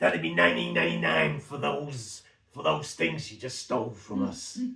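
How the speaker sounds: loud, hissing zombie voice. Narrating a shop assistant turned zombie emerging from the shelves: Marjorie Dawson zombie hiss. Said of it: "and she hisses".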